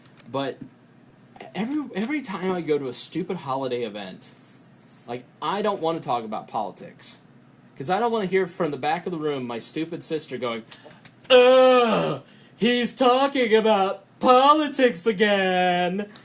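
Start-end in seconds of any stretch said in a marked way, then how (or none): 11.3-16.1 high, loud, slow drawn-out mocking voice. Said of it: "Which is an accurate impression".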